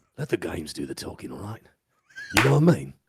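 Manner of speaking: very low pitch, words run together. Wondering how a line sounded in Jason Statham's voice: Jason Statham voice. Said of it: "did he do it in Jason Statham's voice?".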